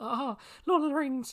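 very high-pitched, put-on hobbit voice. Speaker, describing sitting through the films, exclaims in a Frodo impression. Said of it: "That was your Frodo impression".

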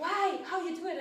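mock, high, loud, demanding, challenging tone.

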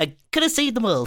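high cartoon sailor voice. Taking turns at cartoon voices, one speaker tries again: Popeye impression. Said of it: "That was an okay Popeye".

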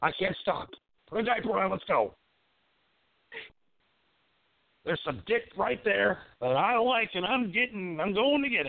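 excited, hyped-up, high, jacked-up rant. Host on a call-in show talking about sex, jacked up. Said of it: "I'm too jacked up tonight".

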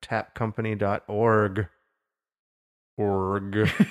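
org said slowly and deliberately, sound by sound. Podcast host reading out a web address, slow careful pronunciation. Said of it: "I have to like slowly say that word".

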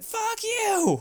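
play-acted freaked-out scream, very high and shrill. Recapping a scene where a woman screams at the clown Art: imitating her screaming at him. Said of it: "she's just like screaming at him".

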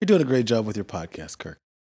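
very low, insincere, heavily sarcastic tone. Complimenting someone on their podcast, sarcastic. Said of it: "that was sarcastic as hell".

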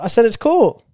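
very high sarcasm. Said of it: "It just sounds very sarcastic".

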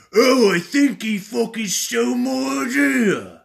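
very shrill, very loud, booming, deliberate, drawn-out high voice. Doing a quick Greg impression to give his exact quote. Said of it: "let me do a quick Greg impression".

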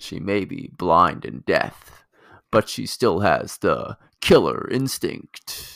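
gravelly action hero voice. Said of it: "You have to do a gravelly action hero voice".

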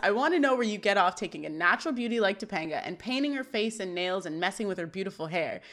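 ordinary delivery

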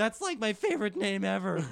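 loud, high-pitched cartoon style. Retelling a story, the speaker quotes Shaggy: Shaggy voice. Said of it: "You're a good Shaggy".

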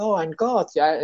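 high, hyped gasp of delight. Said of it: "they would be totally hyped".

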